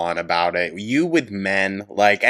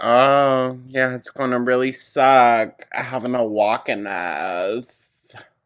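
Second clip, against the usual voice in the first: leading, pointed hinting tone with drawn-out "oh"; 4 semitones higher than usual. Imitating a coworker hinting for a ride home: imitating someone hinting for a ride. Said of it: "you were the one that was begging for the ride".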